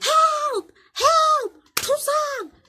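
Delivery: shrill, very high, loud yelling. Retelling how the man who ran yelled for help: imitating someone yelling for help. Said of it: "and he starts yelling".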